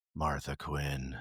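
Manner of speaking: very deep, low, hushed and really creepy voice. Showing how a name must properly be said, in a low, creepy voice. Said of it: "lower your voice and say it in a really creepy way".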